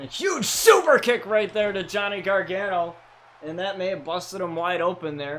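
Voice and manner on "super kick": heavy emphatic stress on "super kick". Wrestling commentator calling a move on a wrestler, emphasizing 'super kick'. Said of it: "I always like to emphasize the word super kick".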